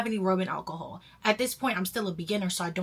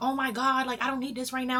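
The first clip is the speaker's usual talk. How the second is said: mock irritable snapping, higher pitched; 6 semitones higher than usual. Retelling a panicked call with her boyfriend: imitating herself snapping. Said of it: "now I'm snapping at him".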